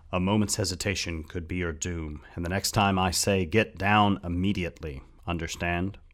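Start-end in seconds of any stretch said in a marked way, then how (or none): none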